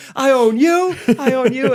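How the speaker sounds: very high-pitched, drawn-out hollering yell. Describing a drill with kids, the speaker acts out retelling yelling at kids. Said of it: "I just start yelling at all the kids".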